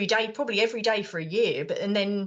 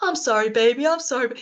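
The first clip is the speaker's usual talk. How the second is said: shouting, louder; 4 semitones higher, 3 dB louder than usual. Recalling a film scene where he's on the phone: imitating Happy Gilmore shouting. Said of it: "Shouting down the phone".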